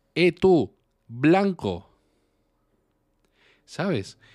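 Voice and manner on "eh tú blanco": shouted, yelled loudly. Telling a story, the speaker retells how someone shouted at a blond boy, retelling a shout. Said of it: "y le gritó".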